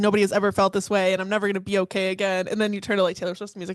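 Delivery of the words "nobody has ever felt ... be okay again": ordinary talk, nothing marked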